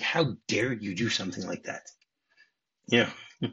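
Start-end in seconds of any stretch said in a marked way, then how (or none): 0.0-1.8 mock offended tone, quieter. Retelling how a character reacts to his friend's news: imitating someone offended. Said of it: "he says it in a way like".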